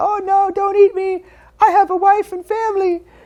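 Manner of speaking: tiny, very high, slow little voice. Retelling a scene where a character voices a gummy bear: little gummy bear voice. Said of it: "he does the little voice of the gummy bears".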